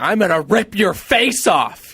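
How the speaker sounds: high, mock furious, angry outburst. Recalling the spot-on impression of Jasmine done with puppets, mock-angry Jasmine impression.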